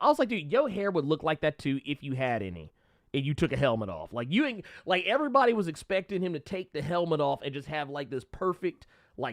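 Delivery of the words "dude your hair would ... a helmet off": plain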